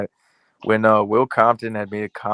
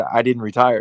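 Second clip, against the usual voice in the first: mock no-nonsense stern, firm voice. Retelling an interview reply about retirement: imitating Whittingham's stern voice. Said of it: "with a stern-ass voice".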